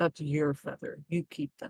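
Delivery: soft, hushed half-whispered aside. A character half-whispers to Rin during a persuasion attempt, half-whispering. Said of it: "I'm gonna whisper to Rin".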